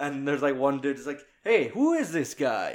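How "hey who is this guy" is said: slow, over-the-top, exaggerated American accent. Retelling what one guy among the martial arts groups said, in a very american accent. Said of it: "the most American accent".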